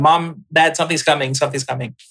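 normal talking voice

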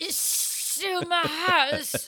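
put-on slow, drawn-out, high-pitched drunken voice. Repeating a drunk line as a Dudley Moore impression. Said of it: "That was my Dudley Moore".

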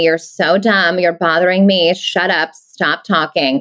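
snide, snarky delivery. Speaker describes a role unlike their own personality: snarky. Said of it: "taking on that kind of snarky".

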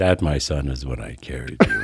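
eerie, creepy, very deep and low delivery. Speaking as a father to his son, in a creepy put-on voice. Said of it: "that sounded creepy".

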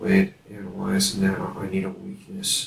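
quiet whispering. Stopping mid-scene, a character speaks to a member of the party: whispering. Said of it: "I just stop and I whisper to Wade".

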